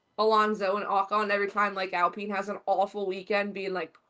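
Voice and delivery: plain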